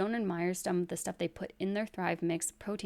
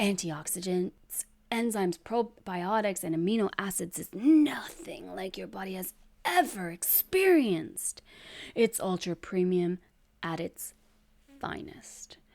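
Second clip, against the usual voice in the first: put-on inspiring, uplifting voice; 4 dB louder than usual. Reading a product's website description aloud, in an inspirational voice. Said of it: "we should do this in like a inspirational voice".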